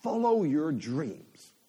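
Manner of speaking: put-on American accent. Quoting a slogan seen on Instagram: American accent. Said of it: "I don't know why that's in an American accent, but it is".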